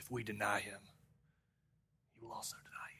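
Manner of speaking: nasty, harsh, mean, hushed whisper. Showing how to say the second part of verse 12, in a real mean voice. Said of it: "you have to say it with a real mean voice".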